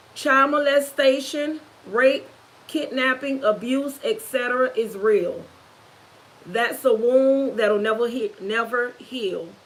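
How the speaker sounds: ordinary delivery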